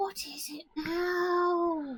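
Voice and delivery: tiny high weaselly creature voice, stretched out. Describing a giant weasel poking its head out, in a little weasel voice. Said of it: "you just hear this little voice going".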